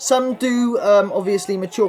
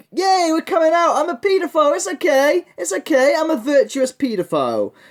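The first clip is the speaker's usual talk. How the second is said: mocking, put-on cheerful voice, pitched up; 7 semitones higher than usual. Mocking the people being criticised with a quote: mocking put-on cheerful voice. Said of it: "and be fucking, um, like".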